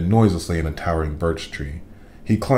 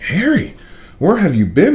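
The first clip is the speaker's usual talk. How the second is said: squeaky, very high calling voice; 13 semitones higher, 3 dB louder than usual. Hermione, seeing harry come back after dark, squeaks at him. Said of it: "Hermione squeaked".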